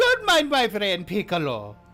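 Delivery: loud character voice with big pitch swoops. Voicing the toy seller introducing his monkey: Blinsky voice. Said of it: "he goes".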